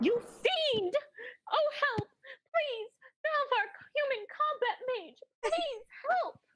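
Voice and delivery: put-on panicked cry. Voicing a captive on stage calling out for rescue: panicked cry for help in character.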